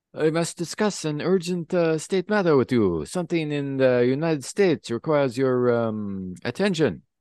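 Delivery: put-on Russian accent. Asked to use the russian accent, the speaker voices a character: russian accent. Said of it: "your Russian accent".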